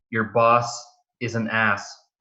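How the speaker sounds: ordinary delivery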